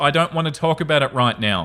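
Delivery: plain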